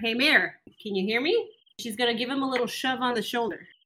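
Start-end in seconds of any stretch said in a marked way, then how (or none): 0.0-1.5 yelling, calling out loudly. In a staged scene, a character starts yelling at the mayor; yelling at the mayor. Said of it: "Smee is going to start yelling at the mayor".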